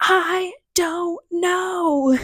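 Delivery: play-acted, high, mild, small half-scream. Retelling answering a friend's dad's question: retelling own scream. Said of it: "I remember turning to him and screaming".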